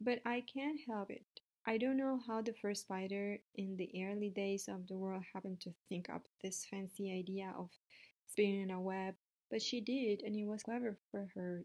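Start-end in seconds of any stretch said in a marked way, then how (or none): none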